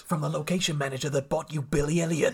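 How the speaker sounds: grand, epic movie-trailer announcer voice. Describing a friend's running joke, the speaker announces things like movie trailers. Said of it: "he'll just announce things like they're movies".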